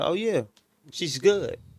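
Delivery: high, breezy, reassuring tone.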